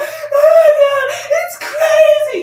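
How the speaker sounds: mock out of breath, very high, very loud, very slow. Retelling a woman on the news answering a question: imitating someone out of breath. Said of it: "She was out of breath".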